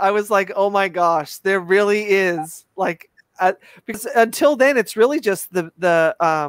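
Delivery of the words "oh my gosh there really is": ordinary talk, nothing marked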